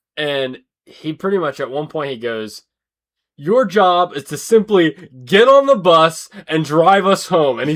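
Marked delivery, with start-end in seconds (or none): 3.4-7.6 very loud, high, furious, angry screaming. Quoting a guy on a school bus yelling at the bus driver: retelling a scream. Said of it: "he's screaming at the the like bus driver".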